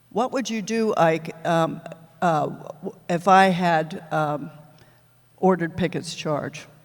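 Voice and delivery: ordinary delivery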